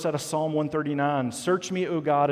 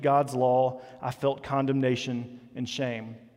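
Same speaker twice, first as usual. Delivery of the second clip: ordinary delivery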